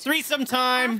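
excited, eager voice. Reacting while exploring a haunted mansion in a game: excited voice. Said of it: "get excited voice".

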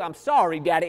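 choked-up, tearful voice with little crying catch. Preacher in a sermon retells his little son apologizing, imitating a child's choked-up crying. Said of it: "He's got that little choke up in his voice".

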